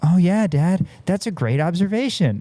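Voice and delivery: mock, faintly sarcastic, high little kid voice. A dad retells his toddler daughter's reply to him: imitating Ava, mock-sarcastic. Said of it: "It almost feels like sarcastic".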